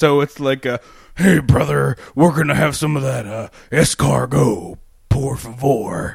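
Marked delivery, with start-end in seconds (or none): 1.2-6.1 grunty, rough voice in halting bursts. Imitating Hulk Hogan ordering food in French: Hulk Hogan voice. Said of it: "Hulk Hogan's grunty, halty English".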